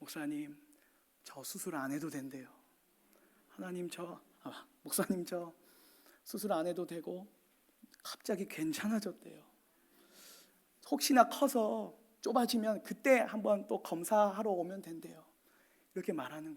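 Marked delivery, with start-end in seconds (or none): 0.0-15.2 put-on, choked-up, on the verge of tears. Retelling a child's phone call about the surgery news: imitating a child speaking tearfully. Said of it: "그 아이가 저에게 울먹이면서 이렇게 말해요".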